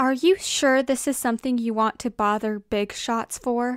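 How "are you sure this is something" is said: ordinary delivery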